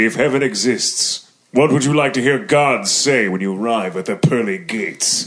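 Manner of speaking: deep, low godlike voice. Reading the last question aloud after being asked: godlike voice. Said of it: "Say it in your godlike voice".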